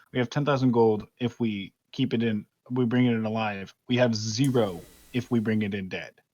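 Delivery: soft, hushed speech. Planning an ambush with the party, a character speaks in a hushed voice. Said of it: "This is in a hushed voice".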